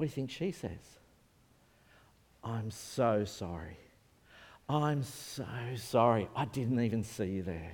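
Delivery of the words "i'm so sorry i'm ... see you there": very slow, remorseful, repentant, sorry drawn out. Retelling what the other driver said after the crash: imitating a repentant apology. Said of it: "So she's repentant".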